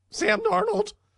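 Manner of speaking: squeaky voice breaking very high mid-word. Talking football, repeating a quarterback's name with a deliberate voice crack. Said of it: "See how my voice cracked".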